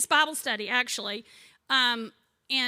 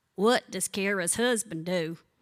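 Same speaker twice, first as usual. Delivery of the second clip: put-on East Tennessee Carter County twang; 5 semitones lower than usual. Retelling what an elderly bunco friend asked: imitating a Carter County accent. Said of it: "she talks like this".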